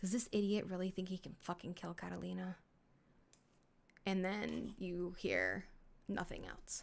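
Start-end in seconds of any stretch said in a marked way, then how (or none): 0.0-2.6 muttered under breath, much quieter and faster. Narrating what Sophia is overheard saying to the group, muttered under her breath. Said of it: "you kind of hear her say under her breath".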